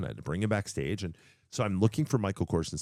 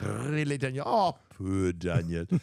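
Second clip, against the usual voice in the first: fake, heavily laid-on Irish accent; 3 semitones higher than usual. Trying out accents after a bad scottish one: put-on irish accent. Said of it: "I give him an Irish one".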